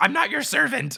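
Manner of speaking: high, loud, indignant, protesting tone.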